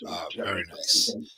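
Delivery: hushed, soft, unvoiced whisper.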